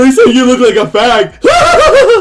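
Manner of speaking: mock very high, shrill squeaky giggle, drawn out. Act out him passing on what the girls whispered, imitating a squeaker giggle. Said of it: "in a squeaker giggle".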